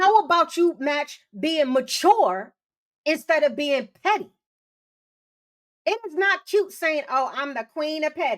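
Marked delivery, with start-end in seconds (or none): 7.1-8.4 put-on mock-sarcastic tone. Speaker criticising petty people quotes them mockingly: mock-sarcastic quote. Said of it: "very sarcastically, I'm saying that".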